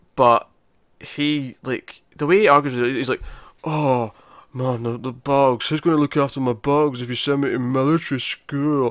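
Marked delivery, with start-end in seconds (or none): 3.6-8.9 awful, overdone cartoonish stock teenager voice. Discussing a show, the speaker imitates a character arguing in a caricatured teenager voice. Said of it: "caricature of what a teenager is supposed to sound like".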